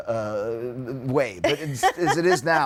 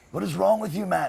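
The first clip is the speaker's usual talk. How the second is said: angry outburst, higher pitch; 7 semitones higher than usual. Retelling a dream where Keith glares at a bad guitar player: imitating Keith angrily. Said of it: "he was so angry at me".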